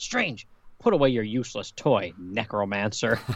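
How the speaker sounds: put-on pissed-off voice. Recapping a comic panel where a character scolds another, mock-angry. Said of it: "she gets all pissed off and shakes her fist at him".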